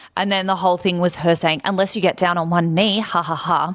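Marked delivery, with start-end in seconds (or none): 1.7-3.8 imitated crazy, kooky voice. Retelling what she said in the ads: imitating her crazy and kooky. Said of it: "crazy and kooky".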